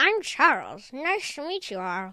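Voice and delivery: slow voice like a stuffed plush toy. Voicing a Squishmallow plush that introduces itself: Charles the Squishmallow voice. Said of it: "which Squishmallow is this?".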